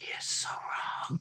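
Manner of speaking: very quiet, slow, secretive hushed whisper. Retelling what the friend on the boat said: imitating a whisper. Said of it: "he totally whispered it to me".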